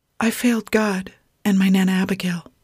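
hushed whispering. Grace, warming her hands on a bowl, speaks in a whisper. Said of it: "she whispered".

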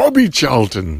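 mock loud shout. Telling how a man who sat down shouted at the storyteller: retelling a shout. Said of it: "And shouts".

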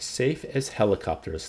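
ordinary delivery

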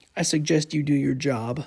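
mock snarky, sarcastic tone. Retelling what an angry customer said: imitating a snarky customer. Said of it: "very snarky".

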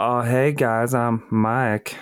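put-on Southern American accent. Speaker shows how he'll introduce himself to the group, in a put-on southern american voice. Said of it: "Is that your Tiger King impression?".

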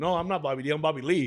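ordinary talk, nothing marked

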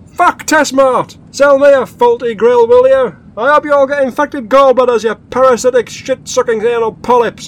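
very loud, all-out screaming rant. Window wound down while spinning donuts, screaming at Testmart. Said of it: "scream like this".

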